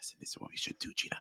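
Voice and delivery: hushed, breathy, very quiet whisper. Retelling how he talked through a plan: imitating someone whispering.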